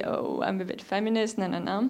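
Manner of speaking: usual speaking voice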